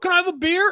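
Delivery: mock theatrical tone. Retelling how his son asks for a beer after practice: imitating a performative ask. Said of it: "he'll performatively go".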